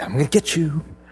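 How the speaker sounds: put-on whisper. Retelling how someone crawls up to sneak a photo of the dog: imitating someone whispering. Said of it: "he whispers".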